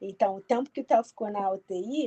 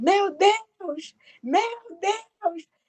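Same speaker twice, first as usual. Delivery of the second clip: mock very high, slow, drawn-out despairing cry; 11 semitones higher than usual. Retelling how a father reacted when the news came, retelling a shout. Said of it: "ele só gritou assim".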